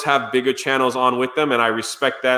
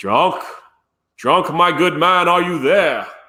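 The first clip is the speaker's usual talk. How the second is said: very bad put-on Australian accent; 4 semitones higher than usual. Retelling waking to Robot Head calling out, bad Australian accent. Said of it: "That's the worst Australian accent you'll ever hear in the history of your life".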